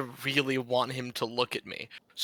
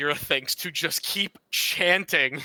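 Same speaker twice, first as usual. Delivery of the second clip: ordinary talk, nothing marked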